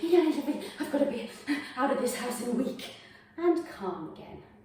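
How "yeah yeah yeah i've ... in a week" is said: frantic, wound-up, fast, manic rush of words. Leading a stretching class, acting out own thoughts: acting out own manic voice. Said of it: "You can hear the mania in my voice".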